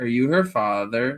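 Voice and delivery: acted-out, dead-serious, earnest child voice. Retelling how a kid asked a question: imitating a kid sounding serious. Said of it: "he sounded really serious".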